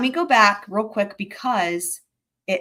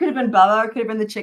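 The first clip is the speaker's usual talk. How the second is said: words broken up by laughing, talking through laughter; 2 semitones higher, 3 dB louder than usual. Recalling a silly moment from a trial, laughing while talking. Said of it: "now I'm, like, laughing".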